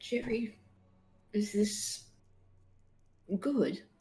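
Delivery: hushed, soft, private half-whisper. Voicing a character asking a skull for advice: half-whispering to a skull. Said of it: "Fancy Boots is gonna whisper to Jerry".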